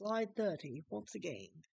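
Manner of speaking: sudden put-on British accent. Walking through slides and calling out the slide number, British accent. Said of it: "I just turned into a British person".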